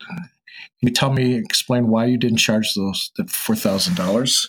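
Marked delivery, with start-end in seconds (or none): none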